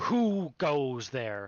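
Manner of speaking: furious, loud, ghostly angry shout. Game master voicing one of two ghostly women confronting the players, angry shout. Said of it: "in an angry tone, one of them shouts at you".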